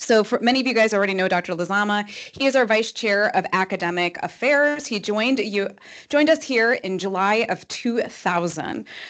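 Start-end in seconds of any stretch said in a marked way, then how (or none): 0.0-2.1 Chicago accent, rattled off fast. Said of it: "you're gonna hear my Chicago voice go real fast".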